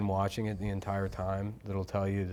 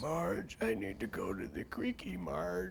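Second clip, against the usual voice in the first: put-on quiet, creaky elderly man voice; 6 semitones higher, 7 dB quieter than usual. Joking that the actors sound older now, the speaker does an old Homer Simpson voice. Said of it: "Homer sounds like a senior citizen".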